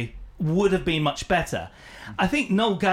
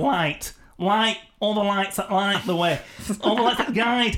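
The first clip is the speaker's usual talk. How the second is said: Mancunian Manchester accent; 3 semitones higher than usual. Speaker trying out a line in a Mancunian accent to see if it works. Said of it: "in a Mancunian accent".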